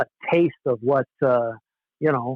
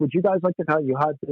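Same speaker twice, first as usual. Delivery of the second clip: imitated German accent; 2 semitones higher than usual. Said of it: "this German-sounding guy".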